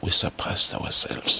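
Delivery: hushed, whispered speech. Speaker talking about their team's achievement, whispering. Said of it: "I'm whispering".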